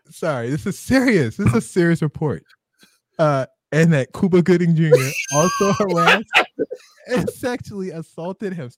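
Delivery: mock-serious, stifled giggles. Trying to read a serious report while another person teases, holding back laughter. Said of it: "Stop making me laugh".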